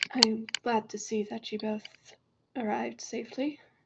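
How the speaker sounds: hushed, quiet, soft-spoken character voice. Voicing a character who greets two arrivals, in a quiet character voice. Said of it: "their voice is actually pretty quiet".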